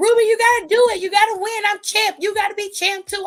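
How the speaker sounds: high-pitched, screaming, encouraging tone. Retelling how a wrestler yelled at her partner during a match: imitating Saraya screaming. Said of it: "she was just screaming".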